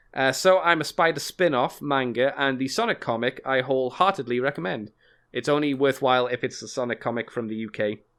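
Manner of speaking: plain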